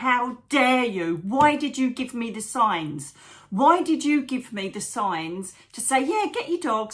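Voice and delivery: acted, raging, accusing furious scream. Retelling screaming alone in the car after walking out, reenacting a furious scream. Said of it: "screaming at the top of my lungs".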